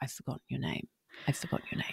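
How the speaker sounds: hushed whisper, as quiet as possible, barely audible. Retelling an aside said with back turned to the cameras: very quiet, hushed. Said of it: "I was trying to say it so quietly".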